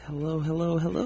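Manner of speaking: gentle, very high voice. Opening a show with a greeting in a radio voice, gentle. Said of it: "So gentle".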